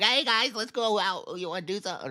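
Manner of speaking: put-on squeaky, very high nerdy kid voice. You imitate how he talked to the guys as a kid, in a nerdy, high-pitched kid voice. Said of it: "like a nerdy, either nerdy or high pitched".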